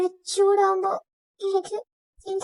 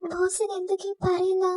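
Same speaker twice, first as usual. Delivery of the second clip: usual speaking voice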